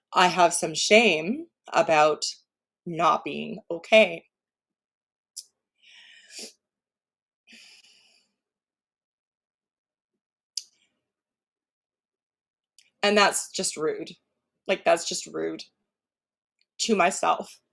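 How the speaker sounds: choked-up voice holding back tears. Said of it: "not gonna cry today".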